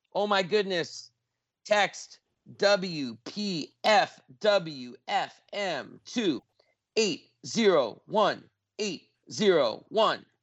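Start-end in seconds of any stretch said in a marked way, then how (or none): 1.6-10.2 slow, unhurried delivery. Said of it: "Gave it out slowly".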